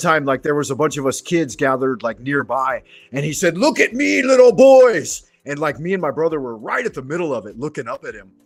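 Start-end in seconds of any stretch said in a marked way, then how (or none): 3.6-5.2 very high, loud, slow drawn-out yell. Recalling a man addressing a group of gathered kids; retelling a loud yell. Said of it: "yelling in a loud voice".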